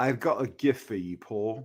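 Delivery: put-on British film-star accent. Imitating a rich man offering a gift at a function: Michael Caine impression. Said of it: "that's a great Michael Caine".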